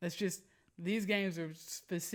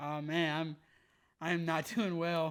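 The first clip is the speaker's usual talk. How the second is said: imitated frustrated tone. Retelling the other speaker's answer when asked how the game went: imitating someone frustrated. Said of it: "you sounded, uh, frustrated".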